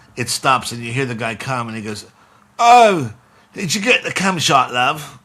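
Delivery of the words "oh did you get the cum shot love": put-on loud, pitched-up British man's accent. Retelling what the guy in the video asked her, in a British accent. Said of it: "In this British accent".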